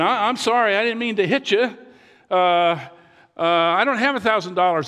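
put-on high, flustered, stammering old man voice. Telling a joke, voicing a grandpa after a crash: imitating a flustered old man. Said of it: "He got all flustered".

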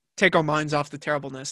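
ordinary talk

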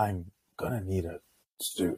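slow, odd, drawn-out delivery. Mocking an actor's odd line delivery: Keanu Reeves impression. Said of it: "his line delivery is so weird. He's like".

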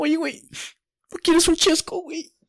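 put-on crying voice. Imagining arriving at a party in tears to offer the listener a soda: acting out crying. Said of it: "Y de repente llego llorando".

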